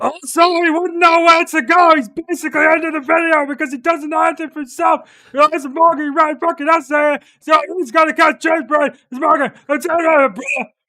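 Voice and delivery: shrill, full-volume yelling, very high. Reading out a viewer's comment as an impression of Zach: imitating Zach. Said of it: "Should I do my impression of Zach?".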